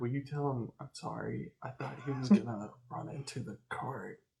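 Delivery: quiet whispered voice. A player's character, after laying it down, speaks to her: whispering. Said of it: "I'll kind of like whisper".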